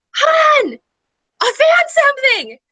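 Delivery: very high, thrilled, drawn-out sing-song shout. Retelling her husband calling out to her while weeding, imitating his excited yell. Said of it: "he yelled out to me in this very husband excited voice and went".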